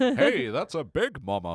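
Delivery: put-on cartoon father voice. Recounting a scene from the show to friends, doing a Homer impression. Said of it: "I'm good at like season one, Homer".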